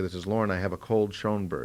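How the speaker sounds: ordinary delivery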